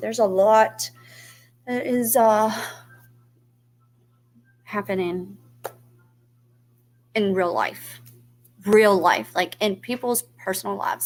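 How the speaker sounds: restrained emotional voice. Speaking to an audience about real life, holding back emotion. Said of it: "I'm trying not to get emotional today".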